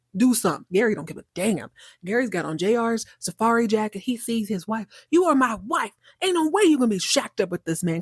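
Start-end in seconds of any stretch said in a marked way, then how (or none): 5.1-8.1 imitated bold, brazen, full-chested voice, higher pitch. Retelling Gary confronting his wife: imitating a bold, full-chested declaration. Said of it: "He says this with his whole chest".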